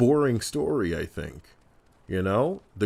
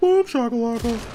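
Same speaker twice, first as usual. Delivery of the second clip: called out, pitched way up; 14 semitones higher, 4 dB louder than usual. Recalling the NBA Jam game announcer's call: imitating the NBA Jam announcer. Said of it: "the announcer would say".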